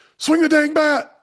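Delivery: shrill, very high, aggressive scream. A dad on the sideline, to his kid who didn't swing at a strike, imitating a dad's aggressive scream. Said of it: "his dad from the sideline screams".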